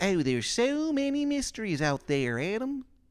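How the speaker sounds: put-on very high, slow, awful Maryland accent. Voicing a store worker who answers a player: worst Maryland accent. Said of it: "the worst Maryland accent you've ever heard".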